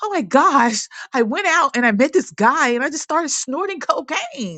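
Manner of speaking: high-pitched, distraught, play-acted dismayed voice. Retelling a woman's Sunday-morning confession to the speaker, imitating a distraught woman. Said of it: "she would be so distraught".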